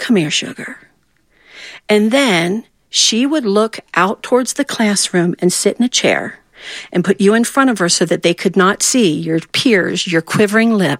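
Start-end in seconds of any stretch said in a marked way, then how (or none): 0.0-0.8 tender, gentle, soft calling tone. Retelling being called to the front of the classroom: imitating a gentle call. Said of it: "she would gently call us".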